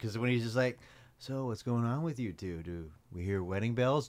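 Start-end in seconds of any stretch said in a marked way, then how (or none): 1.2-4.1 smug, douchey tone of fake concern. Imitating how Stewart talks: Stewart's douchebag demeanor. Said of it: "also how Stewart talks".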